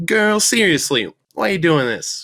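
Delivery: loud, very high, carrying woman's voice. Telling a story from a coffee shop and doing a voice for Libby. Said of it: "but I can do a voice here".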